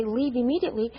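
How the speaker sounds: ordinary delivery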